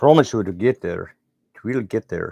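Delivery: horrible put-on Scottish accent. Talking to viewers about a work in progress, in a horrible Scottish accent. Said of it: "That was a horrible Scottish accent".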